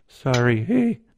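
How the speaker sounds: scared, frightened mumbling out the side of the mouth. Voicing a creature who apologizes to a player: scared mutter out the side of the mouth. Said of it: "mutters it out the side of his mouth because he's scared".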